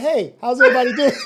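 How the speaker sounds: chummy, friendly, sociable voice. Acting out the other speaker walking around with a cup: acting out the other speaker mingling. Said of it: "You walking around with your cup like this".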